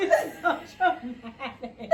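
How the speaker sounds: slow laughter through tears, sobbing.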